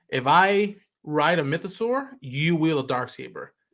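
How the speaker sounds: ordinary delivery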